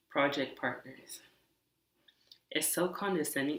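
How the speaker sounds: soft, composed speech. Describing a condescending project partner while keeping the speaker's own irritation under control; quiet and calm. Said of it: "but I'm really pissed off".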